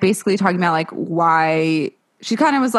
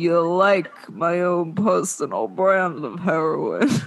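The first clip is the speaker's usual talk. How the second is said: slow, drawn-out drawl, every word stretched; 3 dB quieter than usual. Imitating how Edward says the line in the movie, like Marlon Brando. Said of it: "like he's Marlon Brando".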